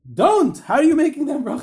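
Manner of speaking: put-on shrill, very high, loud yelling outburst. Retelling how a rabbi reacted to an honoring blessing: imitating someone yelling. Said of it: "started yelling".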